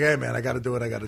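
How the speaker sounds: put-on grudging, reluctant tone. Retelling what a roaster said after insulting him: grudging, imitating Greg Giraldo.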